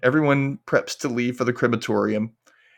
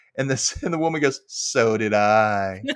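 ordinary delivery

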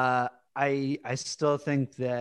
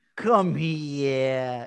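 put-on New York accent, "here" stretched. Imitating a weird line from an episode: Christopher's fake New York accent. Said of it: "sounded like when British people try to be like New York".

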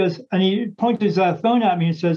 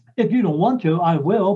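usual speaking voice

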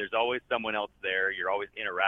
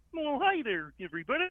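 very high-pitched cartoon frog puppet voice. Describing how a green character talks, the speaker demonstrates: Kermit the Frog voice. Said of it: "he talks like this".

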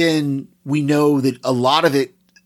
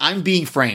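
put-on nonchalant, casual voice. Retelling how Jack reacts to being arrested: imitating Jack, nonchalant. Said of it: "he's so just, just nonchalant about it".

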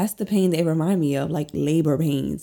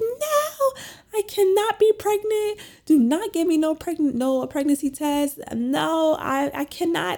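acted-out crying, much higher, slower; 12 semitones higher than usual. Retelling her reaction to being told she'd get a pregnancy test, reenacting her own crying. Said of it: "And I'm just like crying".

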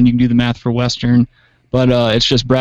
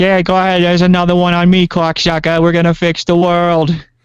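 put-on higher Boston accent; 6 semitones higher than usual. Joking about Kennedy hours before his assassination: Kennedy Boston accent impression. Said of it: "Boston accent".

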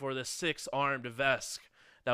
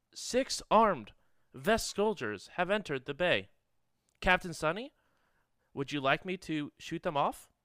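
prim, posh, refined computer voice; 3 semitones higher than usual. Game master voicing the ship computer Al, addressing Captain Sunny, posh Al computer voice. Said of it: "Thanks, Posh [name]. What? Just Owl, you can stop why that. Do you no. sound so fancy?".

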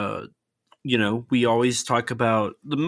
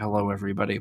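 mock low energy, much lower, quieter; 5 semitones lower, 4 dB quieter than usual. Teasing the other host about how they opened the show, imitating a low-energy greeting. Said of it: "you have low energy".

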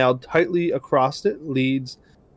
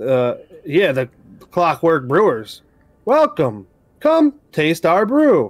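robotic voice, pitched higher; 2 semitones higher than usual. A game master voices automatons greeting the players, in Clockwork Brewers robot voice. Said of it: "you hear a robotic voice from inside".

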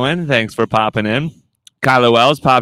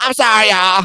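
very high-pitched put-on woman's voice; 10 semitones higher than usual. Retelling how the lady finally came back after ten minutes, doing her voice. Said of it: "I'm doing her voice".

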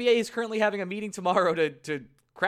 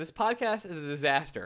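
normal talking voice

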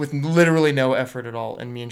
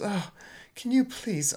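put-on soft, high, British-accented grandmother voice; 8 semitones higher, 6 dB quieter than usual. Voicing Grandma Farnsworth struggling to get plastic cups, in a British accent. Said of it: "Is she British all of a sudden?".

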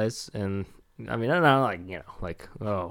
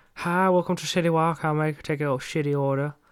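high cartoon restaurant-owner voice; 6 semitones higher than usual. Retelling a cartoon restaurant owner greeting a customer, South Park restaurant-owner impression. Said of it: "He was like".

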